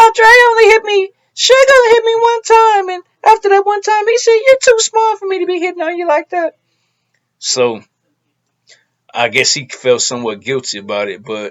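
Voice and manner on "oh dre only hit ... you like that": squeaky voice, pitched high and loud. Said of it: "in her squeaky voice".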